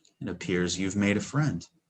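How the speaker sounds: barely audible whisper. Voicing a character speaking to a waking sleeper: faintest whisper. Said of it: "the faintest whisper".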